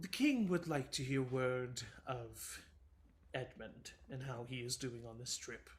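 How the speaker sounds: exasperated, annoyed, over-it delivery. Voicing a messenger who is rolling her eyes: eye-rolling annoyed voice. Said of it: "she's kind of, like, rolling her eyes, um, in her voice".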